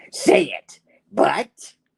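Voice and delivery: high, rough, creaky, raspy voice. Retelling a scene where Norman hears the goblin voice, in a Goblin voice. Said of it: "and the goblin's like".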